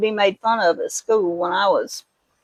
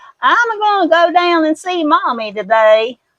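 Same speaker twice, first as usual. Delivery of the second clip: put-on high, whiny, down-home Kentucky country accent; 8 semitones higher, 6 dB louder than usual. Describing how family members talked, in a whiny country accent. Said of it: "it's a little bit more whiny sounding".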